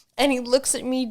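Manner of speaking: normal talking voice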